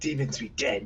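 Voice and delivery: whispered words. Playing a character walking past a guard: whispering. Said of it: "I'm just gonna whisper".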